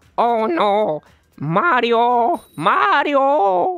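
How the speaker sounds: very loud, high, slow cartoon-style cry. Doing a viewer-requested voice impression of Luigi from Luigi's Mansion: Luigi voice. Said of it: "Luigi from Luigi's Mansion".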